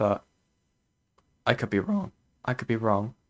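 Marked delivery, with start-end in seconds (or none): 0.0-2.1 soft voice, cracking partway through. Streamer teasing Pinker about Pinker's job, voice cracking. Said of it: "I voice cracked".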